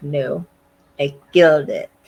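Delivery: put-on cheap slow Russian accent. Recapping an episode where Alex speaks over a loudspeaker: Alex's crappy Russian accent. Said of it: "comes over a loudspeaker with that Russian accent".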